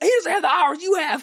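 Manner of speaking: put-on very high defensive tone. Retelling how a commenter defended her husband: imitating a defensive commenter. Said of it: "she's defending her husband like".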